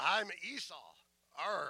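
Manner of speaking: mean, rough, burly pirate voice, rolled r's. Retelling how a son posing as his brother fooled their father, rough burly pirate voice. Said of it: "as like a pirate".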